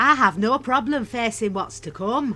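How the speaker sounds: put-on northern English accent. Told to use no accents, an actor reads a line anyway, northern english accent. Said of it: "Is he northern now?".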